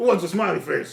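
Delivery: very loud, booming, hammy, over-the-top character voice. Voicing a golden dragonborn in an apron offering pancakes: over-the-top golden dragonborn voice. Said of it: "He goes like".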